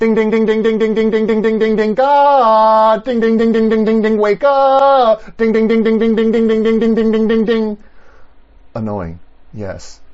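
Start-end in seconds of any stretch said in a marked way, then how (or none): 0.0-7.8 very high, very loud, nonstop desk-bell dinging. Acting out the psalmist ringing a front desk bell at God: imitating repeated desk-bell ringing. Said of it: "like he's ringing the bell at the front desk repeatedly".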